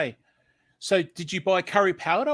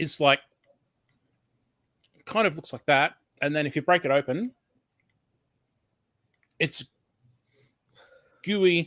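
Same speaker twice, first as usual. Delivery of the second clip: eating while talking. Describing a chomp snack, talking while eating. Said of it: "I'm now eating".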